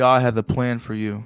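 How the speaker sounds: put-on unconvinced, doubtful man's voice. Show what he sounds like when he says this, imitating someone who doesn't believe his words. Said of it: "That's what he sounds like. He's like, he doesn't even believe the words coming out of his mouth".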